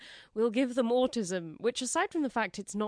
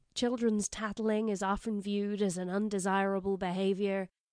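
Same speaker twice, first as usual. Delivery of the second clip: put-on American accent; 2 semitones lower than usual. Reading a co-author's quote from a press release aloud: American accent. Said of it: "I'm doing an American accent".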